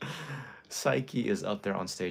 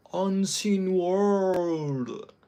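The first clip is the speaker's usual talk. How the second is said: very high, loud put-on American accent; 11 semitones higher, 7 dB louder than usual. Retelling how Psyche echoed your yell before the next set, imitating someone's put-on American accent. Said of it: "Psyche was like with this American accent".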